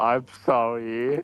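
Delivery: insincere, unconvincing, not-sorry tone. Scolded for questioning the other speaker, someone offers an insincere apology. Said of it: "You don't sound very sorry".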